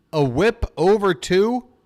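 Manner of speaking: "over" punched hard.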